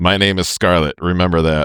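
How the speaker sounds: ordinary delivery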